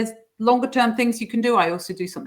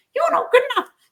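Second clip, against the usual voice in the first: shrill, loud, screeching puppet-show voice; 5 dB louder than usual. Turning a critical inner voice silly, in a Punch and Judy voice. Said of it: "the Punch and Judy voice".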